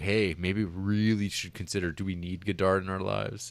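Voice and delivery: ordinary talk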